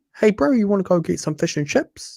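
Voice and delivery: exaggerated New Zealand twang. Explaining the accent behind a voice they practiced, stereotypic kiwi accent. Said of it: "it's a stereotypic Kiwi accent".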